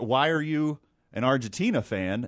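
ordinary delivery

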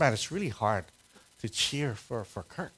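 hushed half-whisper, spoken as an aside. Retelling what a woman half-whispered among opposing fans at a game: retelling a half-whisper. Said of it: "Joe whispers".

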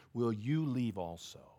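put-on very soft, low, hushed, disappointed tone. Retelling a story, speaking to the few who are left: retelling with disappointment. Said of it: "you can hear the disappointment at the end of the story in Jesus' voice".

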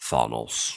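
breathy, breathed-out whisper. Imitating how Thor says a villain's name: Thor saying Thanos. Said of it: "I love how Thor says Thanos".

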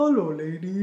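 big, giant character voice. Imitating a line from The Princess Bride: Andre the Giant voice. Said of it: "when Andre the Giant goes".

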